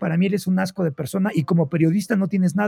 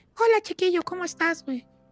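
put-on very high, quick, sweet, cutesy baby voice; 12 semitones higher, 4 dB quieter than usual. Act out the videos of Fer talking to her dog, in Fer's little voice for her dog. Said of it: "con otro tipo de vocecita de".

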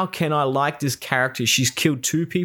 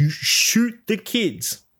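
high, loud yelling in a general's voice; 8 semitones higher than usual. Retelling a general yelling at his soldiers to shoot: retelling a general's yell. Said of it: "he's yelling at the soldiers".

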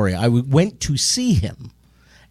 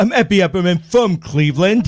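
put-on dopey kid voice, pitched higher; 6 semitones higher than usual. Speaker imitates a podcast guest character in an Epi Epperman voice. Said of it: "talks like this".

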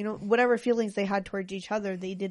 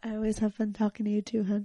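very quiet, hushed voice. Answering a spouse's compliment on talking together: very quiet voice. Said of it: "gets super quiet".

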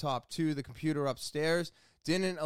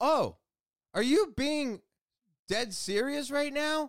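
incredulous, disbelieving tone. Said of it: "And I go".

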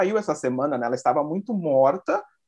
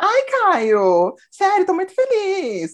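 put-on happy tone, very high, very slow, fake cheer; 13 semitones higher, 5 dB louder than usual. Retelling a contestant's reply to Caio: imitating Thaís's fake tone. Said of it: "até o tom de voz dela foi falso".

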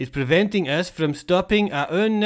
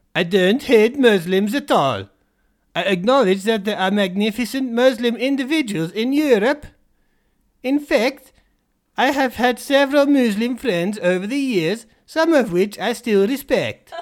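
awful, badly done, put-on Norwegian accent; 2 semitones higher than usual. Quoting what he follows up with, put on more of a terrible Norwegian accent. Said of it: "more terrible Norwegian accent".

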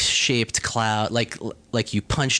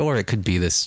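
mock mumbling voice; 2 semitones lower than usual. Imitating the Wikipedia writer adding one more theory: imitating someone mumbling. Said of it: "hear the Wikipedia guy just kinda mumbling".

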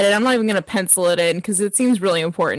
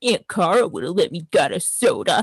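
imitated muttering under the breath. Retelling a remark made to a parent: imitating muttering under breath. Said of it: "I muttered under my breath".

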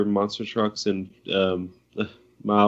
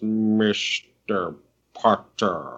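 swooping movie-villain voice with wide pitch swings; 3 dB quieter than usual. Joking about a film villain's line, doing a Hans Gruber impression. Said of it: "everyone loves it in Die Hard when he goes".

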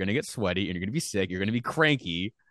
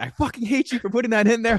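mock very high, loud, shrieking screaming rant; 14 semitones higher, 5 dB louder than usual. Retelling how a guy left the booth to scream at them, imitating someone screaming. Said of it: "he just starts screaming at me".

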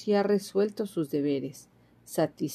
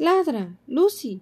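loud, high-pitched calling shout; 8 semitones higher, 6 dB louder than usual. Narrator reads Minnie ordering Lucy again after Lucy stays silent, shouted. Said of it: "voceó".

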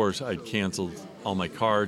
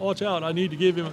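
put-on British accent, high-pitched; 10 semitones higher than usual. Speaker retells a man coming over while he sells stuff: Christopher St. Booth's British accent. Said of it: "in his British accent".

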